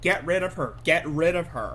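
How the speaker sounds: plain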